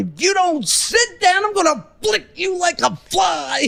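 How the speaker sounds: high, shouted, threatening tone.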